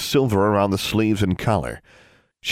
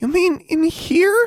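very high, slow, squeaky voice. Anna answers Hawthorne, who has told her to change; squeaked. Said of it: "squeaked Anna".

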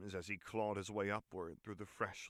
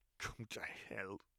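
put-on wheezing, much quieter; 5 dB quieter than usual. James, injured in the grass, speaks to the demon above him; wheezing. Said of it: "James wheezed".

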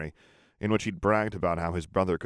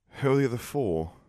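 wary, distrustful, suspicious tone, pitched up; 6 semitones higher than usual. Someone turns back to his brother and questions him; suspicious. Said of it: "He asked suspiciously".

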